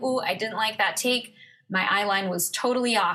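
ordinary delivery

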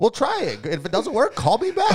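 very high, swooping, bouncy comic voice. Retelling a stand-up bit about phone help: Katt Williams impression. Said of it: "That was Katt Williams".

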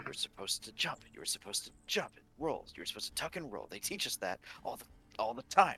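exasperated, frustrated grumbling to oneself. A player voices Zari after he bonks his head in the trees, Zari muttering under his breath. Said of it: "like under his breath".

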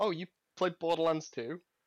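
put-on shy, timid voice. Recalling first walking up to the listener: retelling in shy, timid voice. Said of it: "A very shy, timid voice".

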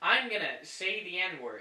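very loud, full-throated yell. Testing the audio levels on a call by yelling. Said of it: "I'm yelling and it's not even".

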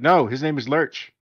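ordinary talk

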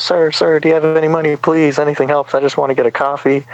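high, begging plea. Retelling how a woman at the store asked for money: imitating a woman asking for money. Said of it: "she goes".

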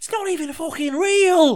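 put-on heavy Scouse accent, pitched way up. Retelling a standoff, quoting what Gibson said, in a thick Scouse accent. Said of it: "in his thick Scouse accent".

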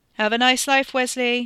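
loud, high-pitched yell. [name] calls out to Wes over the racket as Wes's family drags him away: yelled over the racket. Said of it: "[name] yelled over the racket".

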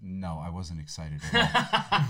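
deadpan, dropped very low. Retelling a woman's reply to a World Cup question, retelling a deadpan reply. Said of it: "she looked at her deadpan and was like".

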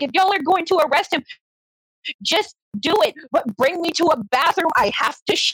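high, screamed-out, screaming yell. Retelling being held in a van, the speaker repeats yelling at the cops; reenacting own screaming. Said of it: "the entire time I'm screaming".

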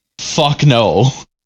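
normal talking voice

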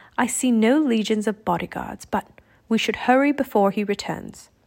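ordinary delivery, nothing marked

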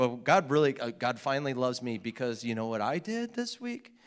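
ordinary talk

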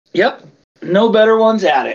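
sleazy salesman voice. Mercenary army answering would-be clients, in a sleazy used car salesman voice. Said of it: "like a sleazy used car salesman".

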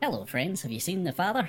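very cheery, cheerful character voice. In a role-play, Ruth walks up and greets the people at the door, Ruth's cheery voice. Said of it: "I can't not laugh at that voice".

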